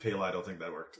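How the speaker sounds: flat, hushed, very low, quiet deadpan. Playing a poisoned character after a seizure, speaking to Pele: deadpan and quiet. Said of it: "deadpan and quietly".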